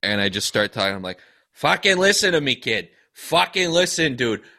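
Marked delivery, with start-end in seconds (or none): 1.5-4.4 put-on Boston Irish brogue. Using Wicked Smarts to talk Roger Clemens round: Boston Irish accent. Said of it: "Boston Irish nonsense at him".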